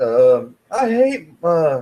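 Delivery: very high, loud put-on Australian-sounding accent. Taking Mister Osbourne's turn in a question game, Australian-sounding Osbourne impression. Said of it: "Is that your Australian accent?".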